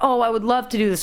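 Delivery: plain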